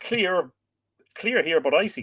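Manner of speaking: usual speaking voice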